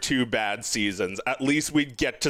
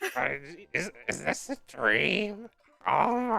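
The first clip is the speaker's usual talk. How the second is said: put-on tired, dreamy voice, higher and quieter; 3 semitones higher, 4 dB quieter than usual. Mocking how Marge sounds now: tired Marge Simpson voice. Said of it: "make fun of Marge's voice because it sounds terrible now".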